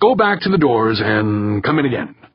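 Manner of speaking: usual speaking voice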